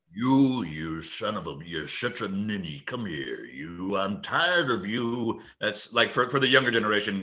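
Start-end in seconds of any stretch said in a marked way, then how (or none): 0.2-5.4 very slow, deliberate, drawn-out character voice. Answering a request for an impression: James Coburn voice. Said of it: "You do a Coburn".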